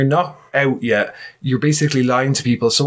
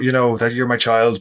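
usual speaking voice

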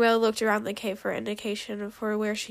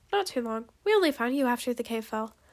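plain reading voice

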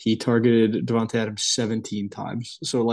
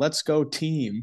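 robotic, pitched-up, cheering voice like a programmed robot; 5 semitones higher than usual. Retelling a sideline clip of a quarterback clapping and cheering: imitating Justin Herbert's robotic cheer. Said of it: "This man is just a robot".

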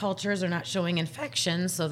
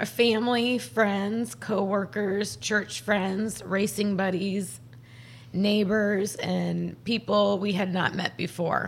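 tearful, voice catching, choking up, close to tears; 3 semitones higher than usual. Speaker thanks everyone for their support, about to cry. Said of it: "I'm going to cry".

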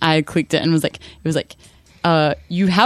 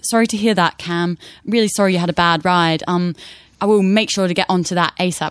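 put-on British accent. Retelling how a man answered Cam's complaint, in a balmy British accent. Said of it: "He had this really balmy British accent".

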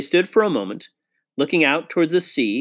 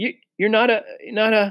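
shaky, trembling, much higher; 7 semitones higher than usual. One of the children asks a question she cannot finish, shaky voice. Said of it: "asked Susan in a shaky voice".

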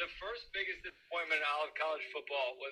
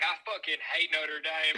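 put-on Southern accent, louder; 6 dB louder than usual. Imitating Brian Kelly after the new coaching job: Brian Kelly impression with Southern accent. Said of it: "Brian Kelly's Southern accent".

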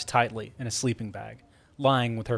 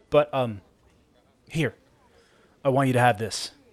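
ordinary delivery

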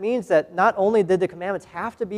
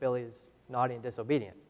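ordinary talk

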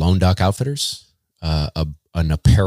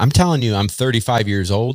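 ordinary talk, nothing marked

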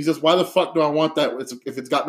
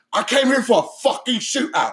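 put-on angry, furious gangster voice, pitched higher; 8 semitones higher than usual. Retelling a movie scene where the gangster is pissed off: imitating a pissed-off gangster. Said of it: "he's pissed off".

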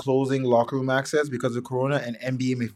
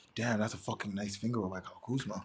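put-on muttered commentator voice, lower and quieter; 4 semitones lower, 13 dB quieter than usual. Retelling what a commentator said on air: imitating Doris Burke muttering under her breath. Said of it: "she's saying under her voice".

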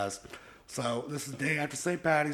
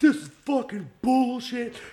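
very loud, high, shrill, furious flip-out; 10 semitones higher, 8 dB louder than usual. Speaker recounts being nice to a scared Jazz, then reenacts flipping out. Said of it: "I just flipped".

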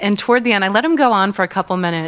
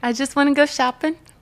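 bad put-on woman's voice, pitched higher; 7 semitones higher than usual. Answering 'why are you here?' in a Bahrain arrival bit, bad put-on woman's voice.

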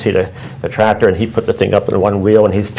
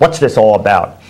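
mock cranky, grumbling, grumpy voice. Retelling what a man at the campground said when he came over, imitating a real grump voice. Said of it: "with a real grump voice".

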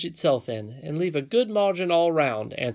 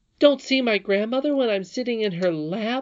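higher-pitched exclaiming; 6 semitones higher than usual. The princess, sitting in her grandmother's lap, answers Curdy by exclaiming. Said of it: "exclaimed the princess".

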